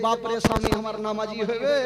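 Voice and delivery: ordinary delivery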